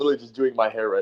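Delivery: words broken up by laughing throughout. Answering a surprise question while doing hair: laughing while talking. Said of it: "I'm laughing so hard".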